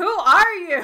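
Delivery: high, loud, baffled shout from a group.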